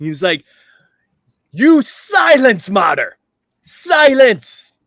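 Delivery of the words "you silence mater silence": booming bellow, very loud, very high, slow. Voicing a character yelling across the bar: yelling at the top of his lungs. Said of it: "Hot Ruffin yells, like, top of his lungs".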